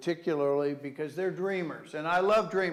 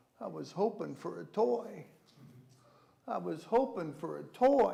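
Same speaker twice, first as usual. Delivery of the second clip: little mock deflated, flustered, disappointed child voice; 3 semitones higher, 3 dB quieter than usual. Acting out a child who opens a sweater on Christmas: imitating a child's disappointed, flustered voice. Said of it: "you hear their little flustered voice".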